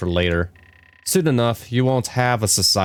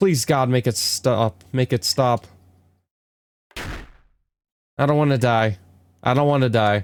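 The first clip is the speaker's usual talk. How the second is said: frantic, rushed, panicked pleading; 5 semitones higher than usual. A rescued character, told they are safe, keeps pleading in a frantic rush. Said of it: "slow down".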